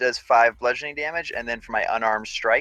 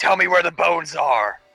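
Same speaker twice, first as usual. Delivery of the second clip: crazed, high, drawn-out acted scream; 6 semitones higher, 4 dB louder than usual. Playing a character screaming at an unconscious foe: in-character scream. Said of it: "Beltic just starts screaming at his unconscious body".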